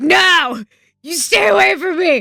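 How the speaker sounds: acted panicked yell. Retelling her own reaction when he offers to come in, retelling a panicked yell. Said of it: "that panic".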